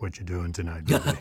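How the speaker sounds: beautiful deep voice, low and quick. Suggesting a listener call their partner on a friday, in a beautiful deep voice. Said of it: "with your beautiful deep voice".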